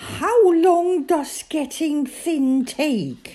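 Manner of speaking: worried, anxious, high, slow and drawn-out. Told he must wait to get thin again, asking anxiously. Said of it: "Asked Pooh anxiously".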